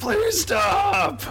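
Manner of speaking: loud scream.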